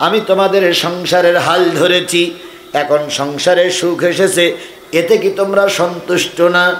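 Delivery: normal talking voice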